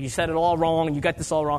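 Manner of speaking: ordinary talk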